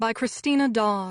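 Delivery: plain reading voice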